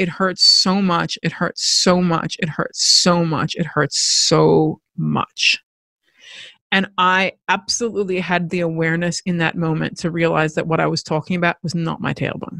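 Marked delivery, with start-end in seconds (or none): none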